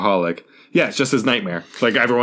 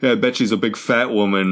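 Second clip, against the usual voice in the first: ordinary delivery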